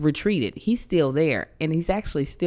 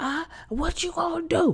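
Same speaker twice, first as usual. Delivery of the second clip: much higher mock drunk yelling. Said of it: "in front of my car yelling".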